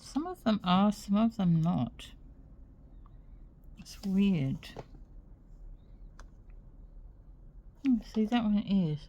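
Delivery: muffled, obstructed speech. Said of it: "I'm talking with a pen in my mouth".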